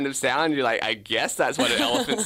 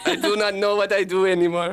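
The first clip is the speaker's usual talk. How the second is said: put-on Russian accent, much higher pitch; 6 semitones higher than usual. A detective disguised as a Russian man answers the one who spotted him, in a put-on Russian accent. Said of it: "this accent".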